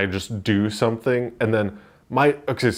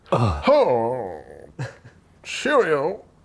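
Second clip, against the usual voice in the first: flamboyantly affected, showy, swooping put-on voice; 3 semitones higher than usual. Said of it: "flamboyantly change your voice".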